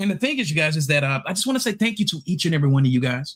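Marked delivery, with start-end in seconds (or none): 1.3-3.4 facetious, mock-sincere, mock heartfelt tone. Thanking the chat and everyone, sounding facetious. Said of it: "I'm sounding, uh, uh, facetious right now".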